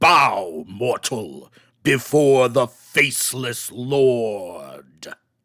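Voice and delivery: deep, booming, resounding voice with "lord" drawn out. A game master voicing a voice from a stone passageway, booming voice. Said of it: "a voice booms out".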